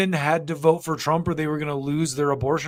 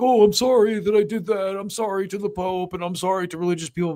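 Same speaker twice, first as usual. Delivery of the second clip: apologetic, pitched-up, caving politician voice; 5 semitones higher than usual. Imitating a typical politician folding under attack: imitating a politician folding and apologizing. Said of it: "this type of attack would fold him and he'd be like".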